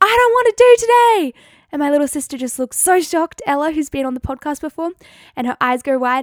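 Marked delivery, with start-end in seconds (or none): 0.0-1.4 very high, very loud screaming outburst. Retelling a drive to school with a younger sister: retelling a scream. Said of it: "I screamed".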